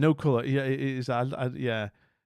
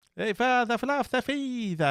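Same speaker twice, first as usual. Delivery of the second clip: mock Finnish accent, higher pitch; 10 semitones higher than usual. Greeting a viewer from Finland to make them feel at home: put-on Finnish accent. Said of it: "I do the accent to make you feel at home".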